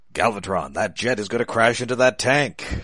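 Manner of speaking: badly done cartoon robot villain voice. Acting out a line from a cartoon scene in a bad Galvatron impression. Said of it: "I can't really do Frank Welker Galvatron".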